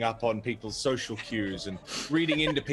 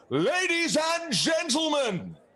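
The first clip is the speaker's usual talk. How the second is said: loudest full-volume shout, much higher, slower; 3 dB louder than usual. A character turns to the crowd and calls out as loud as possible. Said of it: "in the most loud possible voice he can".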